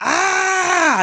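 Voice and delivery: high-pitched, loud scream. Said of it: "I just started screaming".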